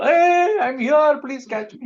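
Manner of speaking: very high, loud, pleading calling voice.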